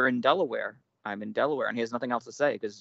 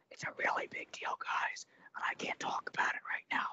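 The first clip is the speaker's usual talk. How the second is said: hushed, breathy, confiding whisper. Imitating the president at a press conference: imitating Joe Biden whispering. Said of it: "our president when he just starts whispering shit randomly".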